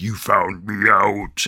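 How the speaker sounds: possessed, super demonic man's voice. Retelling a trick where a girl's voice changes, imitating a demonic man's voice. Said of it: "the girl's voice changes into a man's voice".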